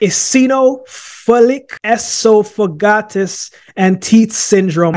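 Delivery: each syllable laid out very slowly and carefully. Host attempting to pronounce a medical condition name, very slow. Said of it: "I'm going to say it very slowly".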